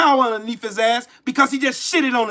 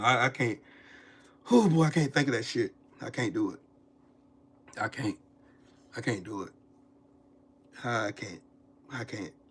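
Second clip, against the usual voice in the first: shaken, rattled, agitated, lower pitch and quieter; 9 semitones lower, 8 dB quieter than usual. Telling the others he is trying to calm down: shaken, struggling to calm down. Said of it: "I gotta calm down".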